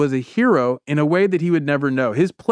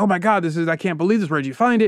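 acted-out, mock-excited outburst; 2 semitones higher than usual. Retelling how a professor reacted when shown the plate, acting out excitement. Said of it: "Professor Bolton gets all excited".

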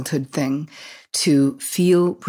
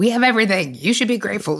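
put-on judgmental tone, higher; 5 semitones higher than usual. Retelling what the speaker says to someone in a bad mood: imitating own judging tone.

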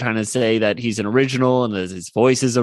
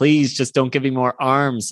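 mock crying, pleading; 2 semitones higher than usual. Describing a cartoon scene, the speaker acts out Yakko crying. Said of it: "and he's crying".

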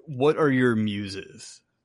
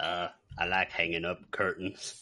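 heavy put-on drawl, lower and quieter; 6 semitones lower, 9 dB quieter than usual. Playing Curtain Man, a show guest asked how life is going, Sling Blade-style Southern accent. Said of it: "you don't have to give him such a accent".

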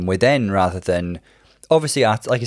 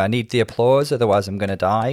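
usual speaking voice

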